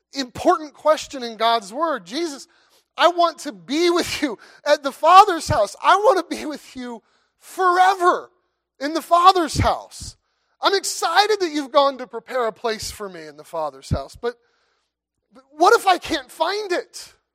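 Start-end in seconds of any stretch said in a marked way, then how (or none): 2.0-17.1 raised, desperate, imploring pleading. Speaker voicing Thomas's question to Jesus in scripture, acting out Thomas's desperate plea. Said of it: "you can almost hear the desperation in Thomas's voice".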